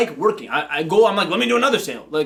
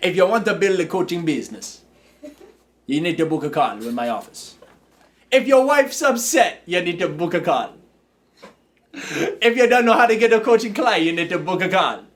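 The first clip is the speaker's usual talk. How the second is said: put-on, laid-on Jamaican accent. Having offered the group his jamaican accent, the speaker performs it: jamaican accent. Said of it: "You guys want to hear my Jamaican accent?".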